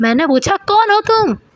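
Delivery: shouted, high, insistent tone. Narrator voicing a character repeating his question to a silent stranger, raised voice. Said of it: "ऊँचे स्वर में बोलता है".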